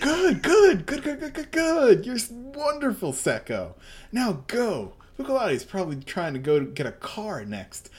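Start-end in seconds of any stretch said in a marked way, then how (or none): 0.0-4.9 very high, swooping, way-too-happy gleeful voice. The narrator voices a man way too happy watching people melt, overly gleeful voice. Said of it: "man who is way too happy about watching people melt".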